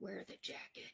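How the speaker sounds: put-on faint, soft, teeny whisper. Retelling a little voice heard while standing in the closet: imitating a whisper. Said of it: "I hear this little just whisper, like".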